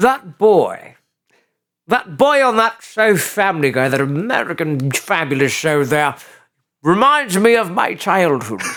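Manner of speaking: put-on villainous, evil-sounding English accent. Playing a character the other speaker calls Rupert, the speaker uses an evil English accent. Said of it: "with an evil English accent".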